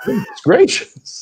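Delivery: very high, slow, drawn-out Southern drawl.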